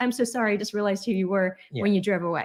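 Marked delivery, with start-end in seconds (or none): none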